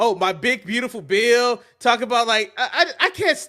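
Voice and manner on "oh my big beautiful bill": put-on acted child voice. Mocking Trump after saying he sounds like a remedial kid: mocking Trump impression. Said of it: "Trump sounds like a remedial kid".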